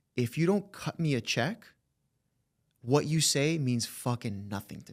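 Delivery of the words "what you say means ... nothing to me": ordinary talk, nothing marked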